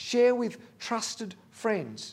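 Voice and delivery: slow, stressed, weighted "trusted". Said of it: "emphasis on trusted".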